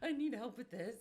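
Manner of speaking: high voice, crying through the words. Retelling a phone call from a woman asking for help: imitating a crying caller. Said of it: "She's literally crying and trying to talk".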